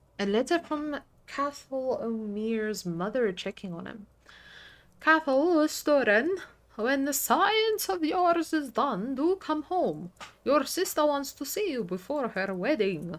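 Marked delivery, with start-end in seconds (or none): 5.0-13.2 loud, booming, pitched-up vampire voice. Reading a mother's letter aloud in a game: Dracula voice. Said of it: "I'm going Dracula, Dracula mode".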